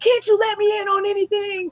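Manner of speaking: play-acted very high-pitched exasperated yell, rising upward. Speaker recalls asking the Lord about marriage, retelling yelling at the ceiling. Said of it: "I'm like yelling up at the ceiling like".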